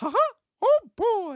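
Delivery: high, sing-song laughing delivery. Reading super chats on stream, the host starts with a classic Mickey Mouse voice. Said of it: "start with the classic Mickey Mouse".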